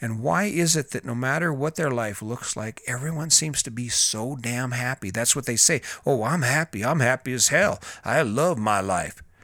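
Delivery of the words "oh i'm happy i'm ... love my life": angry, insistent delivery. Mimicking what people say, in a mock-angry voice. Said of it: "they say in an angry voice".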